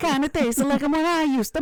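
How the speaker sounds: terrible mock Italian accent. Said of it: "it was really terrible".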